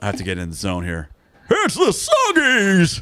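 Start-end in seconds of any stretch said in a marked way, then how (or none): 1.5-3.0 very high pitch with a swinging melody. Performing for the group an impersonation a college friend taught him: Cap'n Crunch impersonation. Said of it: "I gave my Captain Crunch impersonation".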